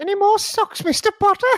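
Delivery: very high, loud, squeaky elf voice.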